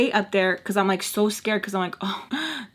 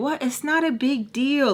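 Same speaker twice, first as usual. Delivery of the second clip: put-on totally unbothered, easy, slow, super calm delivery; 4 semitones higher than usual. Retelling how one man reacted while another screamed outside, retelling a calm, unbothered reply. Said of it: "he's super calm about it".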